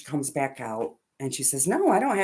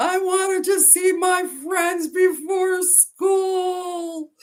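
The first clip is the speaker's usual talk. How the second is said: put-on very high, drawn-out, teary crying kid wail. Retelling what an upset kid in the back seat answered: imitating Emmett crying. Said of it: "why are you crying?".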